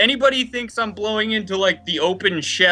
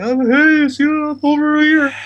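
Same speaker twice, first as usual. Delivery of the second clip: high, drawn-out call as if across room; 7 semitones higher, 4 dB louder than usual. Showing how to sound away from the computer: quieter voice, as if far from the mic. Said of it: "make your voice a little bit quieter, like you're away".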